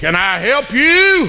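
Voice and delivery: gruff and very slow. Storyteller voicing a man who opens the door to a visitor: rough voice. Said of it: "he says in that rough, rough voice".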